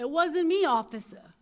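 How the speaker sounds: put-on very loud, shrill, high Brooklyn accent. Retelling the boyfriend lying to the cops, imitating a Brooklyn accent. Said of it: "so he's got that Brooklyn accent".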